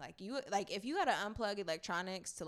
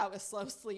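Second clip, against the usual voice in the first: plain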